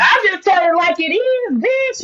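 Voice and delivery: drawn-out, slow yelling, pitched very high. Answering another speaker who asked why so aggressive: yelling. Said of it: "Why you yelling at seven thirty?".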